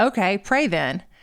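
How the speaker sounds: normal talking voice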